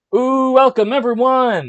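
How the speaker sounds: shrill, booming, very loud, high, thrilled excited yell. Greeting everyone at the start, too excited to hold back, excited yelling. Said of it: "Sorry for yelling".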